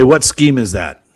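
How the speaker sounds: ordinary talk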